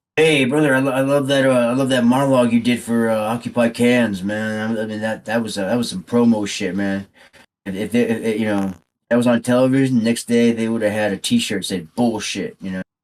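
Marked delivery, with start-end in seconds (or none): none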